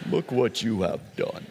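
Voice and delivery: villainous lion character voice. Retelling the scene where Scar walks up to Simba, Scar voice. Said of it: "I even have that Scar voice right now".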